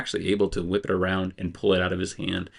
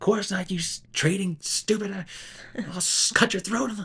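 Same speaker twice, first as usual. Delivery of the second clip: shrill, very high character scream, stumbling over words; 13 semitones higher than usual. Voicing an angry character who threatens the others: screaming in character. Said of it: "screams out".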